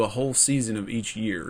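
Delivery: plain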